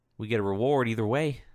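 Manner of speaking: menacing, threatening tone. Voicing a guard, hand on pistol, warning a prisoner: threatening guard voice. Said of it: "and he's like".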